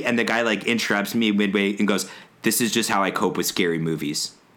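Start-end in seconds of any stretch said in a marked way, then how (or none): 2.4-4.3 mock deadpan, much lower. Retelling a guy who interrupts her about a horror movie, imitating deadpan delivery.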